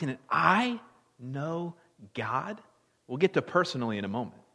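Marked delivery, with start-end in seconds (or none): 0.0-2.6 weight landing squarely on the word I. Asking whether one can know God, stress on I. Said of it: "maybe emphasize the word I".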